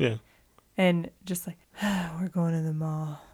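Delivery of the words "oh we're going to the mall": defeatist, beaten-down attitude. Describing a scene, speaker imitates Michael announcing a mall trip: mock-defeatist. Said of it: "with such a defeatist attitude".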